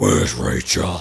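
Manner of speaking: deep, loud gravelly growl impression.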